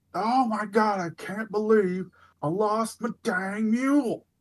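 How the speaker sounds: very high-pitched, top-of-lungs scream. Game master voices a merchant in the middle of the road for the players, screaming merchant. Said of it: "screaming at the top of his lungs".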